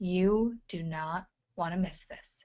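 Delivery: quiet, leaning-in delivery. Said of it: "being quiet and leaning into the camera and says".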